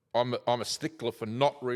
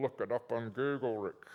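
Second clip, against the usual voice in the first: put-on muffled, quiet muttering voice; 5 dB quieter than usual. Retelling what a tax investigator said when asked questions: imitating Adrian muttering under his breath. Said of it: "under his breath muffle".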